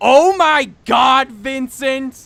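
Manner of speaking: loud, high, very slow, long-stretched delivery. Retelling the mom's reaction to the backflip, imitating Deanna. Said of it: "I'm sorry for my impression of you".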